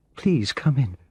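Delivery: trembling, shaky, tearful, high-pitched voice. Narrator reading a woman in tears greeting a visitor at her door: shaky voice. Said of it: "she said in a shaky voice".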